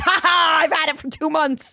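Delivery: acted, loud, high-pitched, smug, gloating bragging tone. Retelling a chat with two friends: imitating own bragging. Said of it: "bragging about having a, a reservation".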